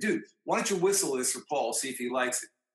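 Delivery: ordinary delivery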